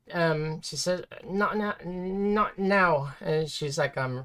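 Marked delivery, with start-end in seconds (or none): 1.2-3.1 slow, quavering, unsteady, wavering voice. Voicing a character whose voice wavers as she speaks: wavering voice. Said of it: "Her voice is wavering".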